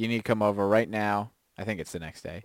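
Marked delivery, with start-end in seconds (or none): none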